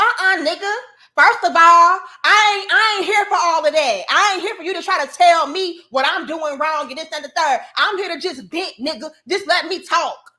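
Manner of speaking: high-pitched, dismissive rant.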